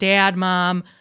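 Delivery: nasal Midwest accent with elongated vowels. A Michigan speaker demonstrates how they pronounced two words, in a nasal Michigan accent. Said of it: "Midwest Michigan people have a very nasally type accent".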